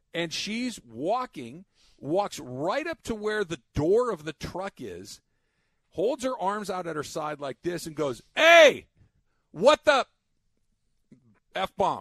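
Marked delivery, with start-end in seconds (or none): 8.3-12.0 very loud, high-pitched, full-throated street holler. Retelling a young woman confronting a trucker blocking the crosswalk, imitating a loud yell. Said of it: "Loud at a trucker in the middle".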